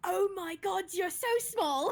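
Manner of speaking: thrilled, charmed, delighted exclamation. Voicing Ruby, who meets a small boy in the forest: delighted. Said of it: "Ruby looks delighted".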